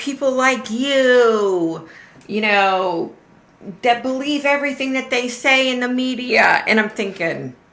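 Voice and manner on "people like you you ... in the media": play-acted heated angry rant, pitched up, slow, "you" drawn out. Recounting an argument, acting out how she went off at him: retelling an angry rant. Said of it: "she just went off".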